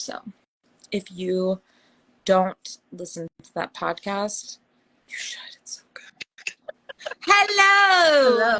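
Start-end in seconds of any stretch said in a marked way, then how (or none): 7.2-8.6 high, loud mock Scottish accent. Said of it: "are we doing the Scottish accent?".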